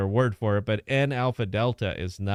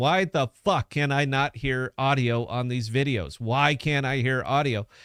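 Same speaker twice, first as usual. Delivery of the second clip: plain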